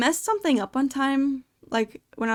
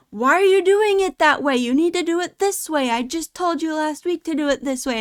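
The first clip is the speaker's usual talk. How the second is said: mock irritated, annoyed scolding tone, pitched high; 5 semitones higher than usual. Retelling being yelled at by a second manager, imitating a manager yelling. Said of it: "a different manager comes up and yelled at me".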